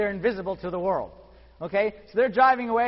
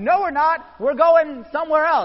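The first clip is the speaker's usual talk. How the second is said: loud, high, hollered-out put-on yell; 6 semitones higher, 6 dB louder than usual. Retelling a cartoon plot, the speaker acts out a character yelling back: retelling a yell. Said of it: "Homer yells out".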